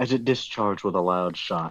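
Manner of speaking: plain reading voice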